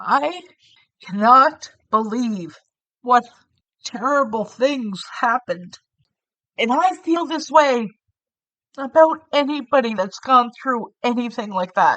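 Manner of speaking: choked-up voice on the edge of tears. Telling viewers about a horrifying documentary, tearing up. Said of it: "I'm tearing up right now".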